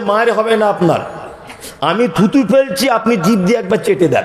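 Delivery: plain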